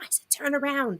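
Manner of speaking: hushed, quiet, whispered stage whisper. Retelling pointing out a chipmunk to a friend: retelling own whisper. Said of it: "And I whispered to him".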